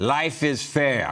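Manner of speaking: comedy Russian accent. Delivering a joke's punchline as a Russian guy at the fair, Russian accent. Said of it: "How about that for a Russian accent?".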